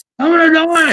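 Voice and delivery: very high-pitched, shrill scream. Retelling being held over a gas grenade: imitating own past scream. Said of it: "I'm screaming".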